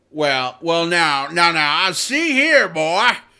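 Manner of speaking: booming, very slow, every word drawn out. Doing a cartoon voice to open a film discussion: Foghorn Leghorn voice. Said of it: "That's my best foghorn impression".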